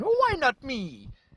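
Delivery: put-on very high, slow, silly, weird Italian accent. Acting out Simon Pegg sitting there after Bradley Cooper gets the part, in a weird Italian Mario voice. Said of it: "In a weird Italian accent".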